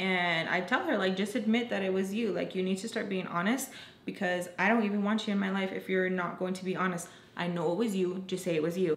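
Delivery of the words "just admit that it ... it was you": ordinary talk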